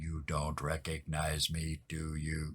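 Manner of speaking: very low, very quiet, flat robotic monotone. A figure sitting across from the players speaks to them, in a very mechanical voice. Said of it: "this very mechanical voice sitting across from you says".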